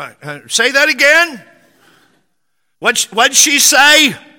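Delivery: put-on loud, high, rising old man voice. Retelling an old man in church asking what was said: imitating a loud old man. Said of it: "There's no such thing as a whisper".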